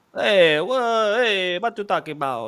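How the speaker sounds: put-on clumsy Polish accent. Commentating a match, voicing Lewandowski protesting a foul call in a bad Polish accent. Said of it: "I try to do a Polish accent".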